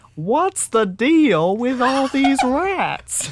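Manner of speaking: very high, loud, slow, drawn-out put-on voice. Answering a request to do a Jerry Seinfeld impression: Jerry Seinfeld impression. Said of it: "Can you do a good enough Jerry Seinfeld impression?".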